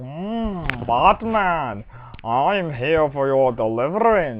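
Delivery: very slow masked-villain voice with drawn-out mm. Mocking a film villain's voice after comparing it to Doctor Evil: Bane voice. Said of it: "sounds like Doctor Evil got a Darth Vader la-, mask".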